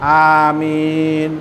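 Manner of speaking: low, slow, polite, drawn-out "amen", moderate volume. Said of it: "যেটাকে মানুষ ভদ্র বলতে পারে এবং স্বাভাবিক শব্দ".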